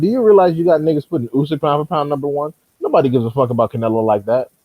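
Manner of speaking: normal talking voice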